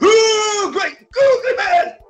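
very high, very loud, slow, startling, shrill exclamation. Retelling a film scene where a character hears noises: startling exclamation in character. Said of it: "You just scared the shit out of me".

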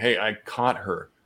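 ordinary talk

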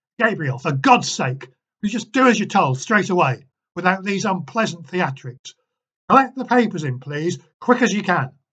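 very loud angry shout. Ed orders gabriel in front of the class, angry, impatient raised voice. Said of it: "He raised his voice, his anger and impatience finally breaking through".

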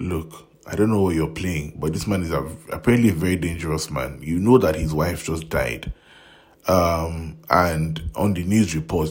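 ordinary delivery

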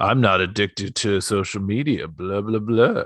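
put-on self-satisfied, superior, dismissive voice. Mocking the other speaker's words, in a put-on smug voice. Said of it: "He says smugly".

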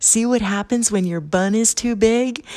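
loud shouting. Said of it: "So I yell to her".

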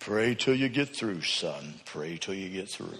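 deep, hushed, low bass voice. Retelling a voice heard while praying, in a deep bass voice. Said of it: "this deep bass voice said".

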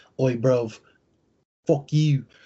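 smug, sneering, put-on British accent. Recalling how Kano talked in the movie: mock British accent. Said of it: "he's not from the UK".

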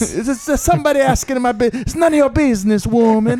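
very high, put-on Italian accent. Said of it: "Yeah, yeah".

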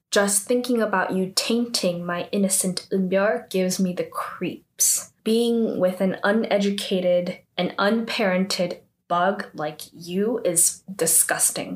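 normal talking voice

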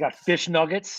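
usual speaking voice

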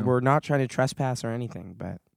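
plain

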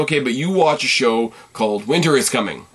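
ordinary talk, nothing marked

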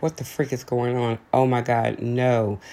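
ordinary delivery

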